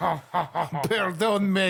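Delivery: slow, laughing, silly fake French accent, drawn out.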